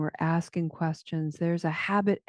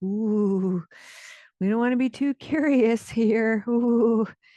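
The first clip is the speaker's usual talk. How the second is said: slightly nervous inner voice, drawn-out ooh; 5 semitones higher, 4 dB louder than usual. Voicing a possible voice in the listener's head: nervous inner voice. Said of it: "a voice in your head that's a little bit nervous".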